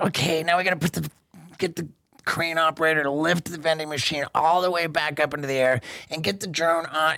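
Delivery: play-acted, cranky, grumpy half-yelled delivery. Retelling screaming directions about reshooting the drone: imitating own past screaming. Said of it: "I'm screaming".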